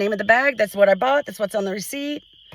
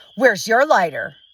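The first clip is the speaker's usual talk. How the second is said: pointed, needling, passive-aggressive tone. Retelling a fight over a lighter: imitating a passive-aggressive question. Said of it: "be passive aggressive and go".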